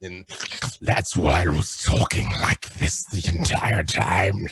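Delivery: put-on monster creature voice. Show guest explains being cast as a mind flayer, in the mind flayer creature voice. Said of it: "There's that voice again".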